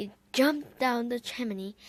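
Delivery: plain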